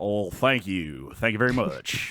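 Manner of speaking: put-on played-up American Southern accent, gracious tone. The episode's winner thanks the host after being announced; Southern accent. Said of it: "a new third Southern accent".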